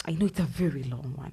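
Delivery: ordinary talk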